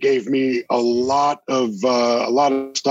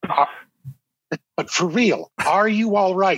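earnest, worried, genuinely concerned tone, pitched up high; 7 semitones higher than usual. Retelling a guest's concerned question: Andy Kindler voice. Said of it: "in his distinct Andy Kindler voice going".

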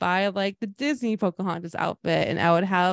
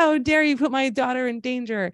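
put-on angry outburst, pitched higher; 5 semitones higher than usual. Retelling a mom confronting trainers over the horse: imitating an angry mom. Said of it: "And she got so mad".

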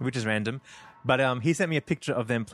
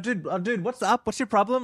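mock yell, raised and pitched up; 9 semitones higher than usual. Retelling a bar argument, the friend confronting a man: imitating someone yelling. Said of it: "yelling at him".

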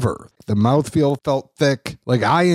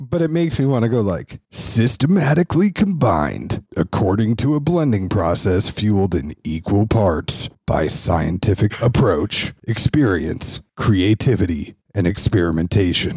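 lower, mock announcer voice; 4 semitones lower than usual. Reading a quoted passage aloud, in an announcer voice. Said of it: "in the announcer voice".

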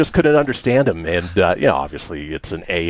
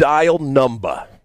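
heavy put-on New Jersey accent, pitched up; 7 semitones higher than usual. Retelling a man trying a voice-dial phone system: thick new jersey accent. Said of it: "in his thick New Jersey accent".

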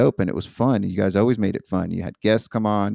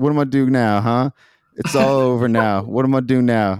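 put-on distorted voice; 4 semitones higher, 4 dB louder than usual. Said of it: "got that distortion voice".

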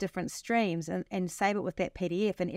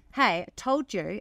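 put-on irritated, snappy tone; 4 dB louder than usual. Retelling how they scold ChatGPT when it stops: imitating own irritated scolding. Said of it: "I get quite shitty with it".

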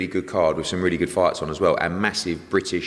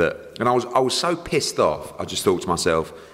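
ordinary delivery

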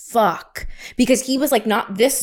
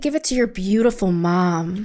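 mock-creepy tone, imitated creepy delivery; 2 semitones lower than usual. Retelling what a woman said to Maria, imitating her creepy delivery. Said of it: "It was the way she said it that was so fucking creepy".

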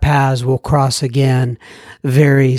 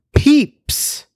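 peeps said high and hip. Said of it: "I sound hip, don't I, when I say peeps".

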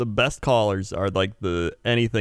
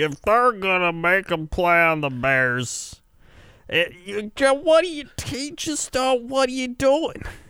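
put-on very high, broken, stumbling drunken ramble; 11 semitones higher than usual. Retelling a late-night radio call from a caller: imitating a drunk caller. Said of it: "and he was just drunk".

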